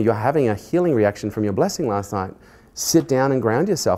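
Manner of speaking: usual speaking voice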